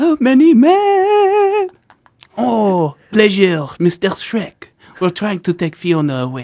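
put-on loud French accent, high and swooping. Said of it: "try to do the impression".

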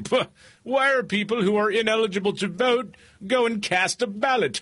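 high-pitched, condescending put-on voice. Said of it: "is now very condescending and saying".

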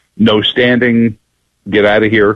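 ordinary delivery

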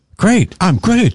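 emphatic, very high, excited exclamation. Showing how to say a greeting reply: said with an exclamation point. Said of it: "say that with an exclamation point".

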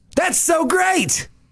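genuinely thrilled, pitched very high. In an acting exercise with a set phrase, saying it genuinely excited. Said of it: "say that genuinely excited".

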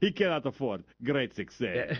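put-on Eastern European accent. Joining a co-host's Borat bit, doing a Borat impression. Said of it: "Or just Borat".

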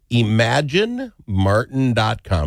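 carefully paced, slow, deliberate delivery. Repeating a web address for the audience: slow, deliberate delivery. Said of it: "Is that slow enough for everybody?".

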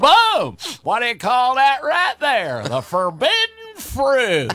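high-pitched swinging voice. Doing a bit from a stand-up act: Barney Fife voice. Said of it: "I do Barney Fife".

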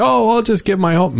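high, mocking, naive put-on voice. Discussing asset transfers to kids, the speaker voices what people think: imitating people's voice. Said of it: "I'm doing the voice".

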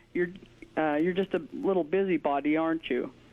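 normal talking voice

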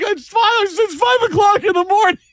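high, put-on defensive whiny voice. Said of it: "I'm like".

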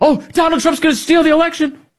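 very high, shrill, hysterical shrieking. Ridicule actors who play tough guys getting up on stage: mock hysterical shrieking. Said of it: "shrieking like hysterical women".

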